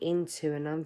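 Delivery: ordinary delivery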